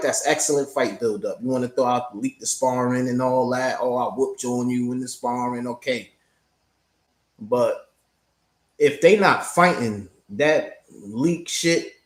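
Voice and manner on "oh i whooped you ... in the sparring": normal talking voice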